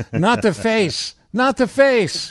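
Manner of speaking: squealing, very high Chicago woman voice. Speaker doing a joke bit about women in chicago, impression of a chicago woman. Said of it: "That's my impression of every woman in Chicago".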